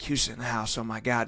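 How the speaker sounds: very quiet half-whisper under the breath. Acting out an imagined commercial scene: half-whispering. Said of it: "and then you're just whispering".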